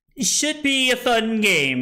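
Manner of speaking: heavy sarcasm. Repeating another player's words back to him: imitating a sarcastic remark. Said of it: "he said. Sarcastically".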